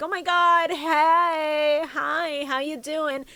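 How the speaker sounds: put-on overly friendly tone. Retelling a cartoon character greeting a newcomer: imitating an overly friendly greeting. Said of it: "And she's like".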